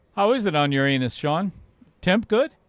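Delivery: plain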